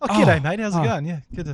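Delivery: ordinary delivery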